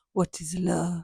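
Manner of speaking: put-on French accent. Retelling what a woman asked the speaker, in a french accent. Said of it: "with this French accent".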